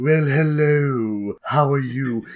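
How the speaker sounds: slow, slimy, seedy villain drawl, "hello" stretched out. Showing one way to voice the final boss: Vincent Price-ish voice. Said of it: "this kind of Vincent Pricey".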